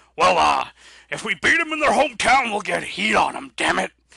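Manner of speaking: bad, very loud, high, gravelly gruff bark. Explaining wrestling booking logic, doing a very bad Vince McMahon impression. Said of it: "I'll do my Vince impression".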